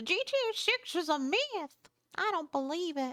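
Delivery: put-on old lady voice. Speaker talking about the GTA six release, in a fake old lady voice. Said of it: "I did like a fake old lady voice there".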